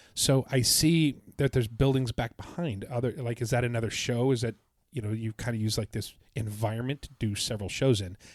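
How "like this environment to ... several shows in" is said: ordinary talk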